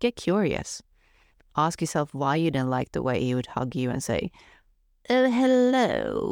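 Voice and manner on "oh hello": very high-pitched, showy, theatrical stage voice. Retelling how a guy would greet the speaker with a hug, imitating a theatrical hello. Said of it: "in a theatrical voice".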